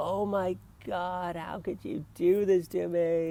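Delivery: mock very high, shrill scream. Retelling a woman's reaction to the speaker, imitating her screaming at them. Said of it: "she's screaming at me".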